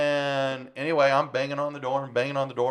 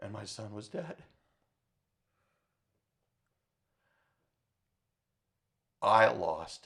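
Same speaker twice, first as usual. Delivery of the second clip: voice choking with tears, lower and quieter; 4 semitones lower, 7 dB quieter than usual. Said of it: "I'm starting to tear up".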